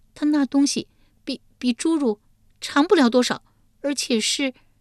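faltering stop-start words, very high pitch. A woman answers the ruler of the underworld's question, hesitant and halting. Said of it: "玉莲吞吞吐吐回道".

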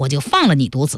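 plain

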